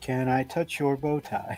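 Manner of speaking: soft, eerie, otherworldly spooky ghost voice. Speaker recounts a ghost's words from a spirit box session, ghostly voice. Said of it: "in a ghostly voice".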